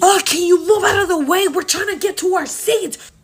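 impatient, high, shrill, demanding screaming outburst. Boarding a plane, recounting a woman who screamed at the speaker; imitating a woman screaming. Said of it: "this woman starts screaming at me".

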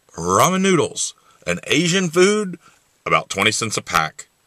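put-on radio announcer reading voice. Trying out an impression of a well-known voice: Ted Williams voice. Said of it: "I want to see if I can do the Ted Williams voice".

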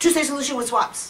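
very fast rattle. Speaker demonstrates how this phrase is usually heard, said really fast. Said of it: "You have to say it really fast".

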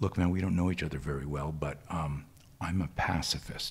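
voice dropped low, close and quiet. Speaker retells a man leaning forward in a restaurant: retelling a lowered voice. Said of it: "leans forward and lowers his voice".

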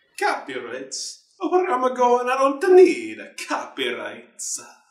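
very high, swooping, sing-song cartoon Italian accent. As the director told he lacks the Jaws copyright, reply in a Mario voice. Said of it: "stop doing the Mario voice".

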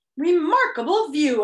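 announcing tone. The humbug bounds from the car and addresses the travelers, announcing. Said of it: "announced the humbug, bouncing from the car".

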